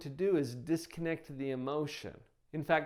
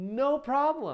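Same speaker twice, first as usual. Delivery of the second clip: easy, light, sing-song lilting tone; 8 semitones higher, 5 dB louder than usual. Showing how to answer a kid who refuses, in a light lilting tone. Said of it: "say it with a little lilt to your voice".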